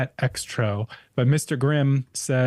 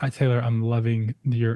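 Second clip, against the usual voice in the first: ordinary talk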